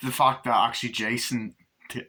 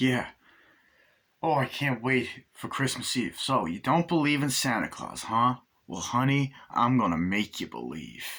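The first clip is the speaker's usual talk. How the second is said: put-on American accent. Retelling a scene from a film, imitating an American accent. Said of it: "he's doing an American accent".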